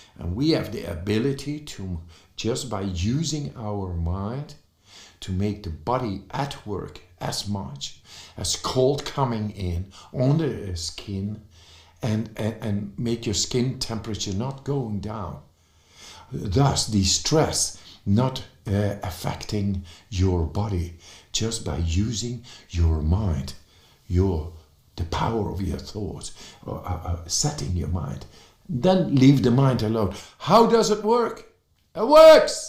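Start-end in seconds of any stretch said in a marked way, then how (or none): 30.4-32.7 high, loud excited yell. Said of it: "I'm sorry, uh, to yell".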